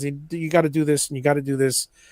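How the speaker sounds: mock deadpan delivery. Retelling a woodworking skit section, Eloy's deadpan delivery. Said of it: "it's his deadpan".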